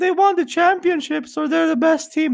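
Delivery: very high-pitched cartoon character voice. Giving a throwback quote to a co-host: Simpsons character voice. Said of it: "It sounds like a Simpsons character".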